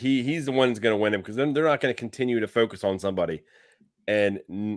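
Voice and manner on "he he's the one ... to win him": normal talking voice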